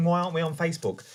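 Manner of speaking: ordinary delivery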